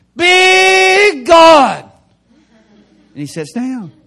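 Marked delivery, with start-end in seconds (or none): 0.2-2.0 very loud, high, booming shout with Big drawn out. Retelling a revival meeting where a man stood up: imitating a man shouting. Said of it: "he stands up and he shouts".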